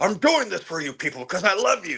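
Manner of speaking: theatrical, tragic, high and swooping dramatic delivery. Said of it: "very dramatic, very, um, Othello-esque".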